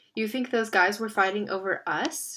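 ordinary delivery, nothing marked

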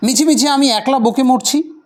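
slightly irritated tone.

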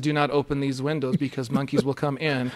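ordinary delivery

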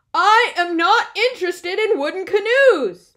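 very loud bear voice. Bear answers the next book Mouse brings in the library, even louder. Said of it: "Bear's voice was even louder".

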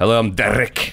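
thick Scottish accent with a shifted voice.

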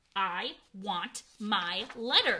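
very slow, dragged-out, loud shouting. Narrator voicing a nephew refusing to leave the kitchen, shouted. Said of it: "he shouted".

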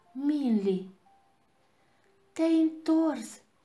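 glad, high-pitched, joyful shout. Narrator reads the dragon calling to a returning figure on the bridge, joyful shout. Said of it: "Strigă el".

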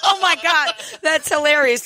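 words broken up by laughter. Reacting to a patient's joke in a skit, laughing while talking. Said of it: "Why am I laughing?".

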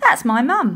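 pleased, amused tone. Molly answers Captain Firebeard's question about the ship; grinning. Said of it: "Molly grinned".

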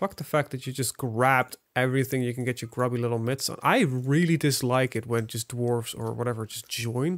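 normal talking voice

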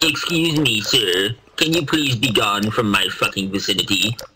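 low, deep cartoon dog voice. Riffing right after praising someone's bit, doing a Droopy impression. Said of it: "it's kind of scary how spot on".

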